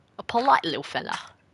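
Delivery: clumsy, bad, put-on British accent. Describing a toddler, in a horrible British accent attempt. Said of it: "it's a horrible attempt at British accent".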